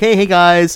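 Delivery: affable, friendly hero-like voice. Joking about sounding like a vigilante: friendly vigilante voice. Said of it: "I'm a friendly vigilante, so I'm more like".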